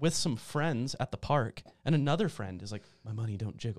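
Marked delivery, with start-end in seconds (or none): 3.0-3.8 muttered, mumbled half under breath, much quieter. Retelling a friend at the park saying it at random, muttered under his breath. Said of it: "almost under his breath".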